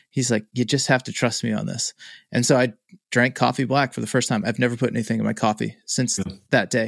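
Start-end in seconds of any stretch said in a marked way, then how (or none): 0.5-2.0 put-on Irish brogue accent. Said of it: "got a brogue to him".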